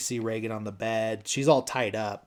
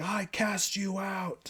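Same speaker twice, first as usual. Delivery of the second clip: very high-pitched, stretched-out, drawn-out shrieking yell; 10 semitones higher than usual. Retelling a movie scene where a priest casts out a demon: imitating someone yelling.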